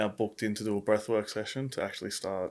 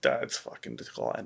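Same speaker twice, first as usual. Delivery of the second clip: mock tearful crying outburst, said through tears; 8 semitones lower than usual. Retelling what a crying sister said about Dad: imitating someone crying. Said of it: "she's, like, crying".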